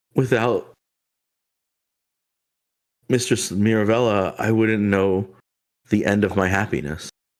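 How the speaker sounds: tearful crying woman, speaking through tears. Retelling a scene, voicing a woman who thanks her mistress: voicing a crying woman. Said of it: "the woman crying would say".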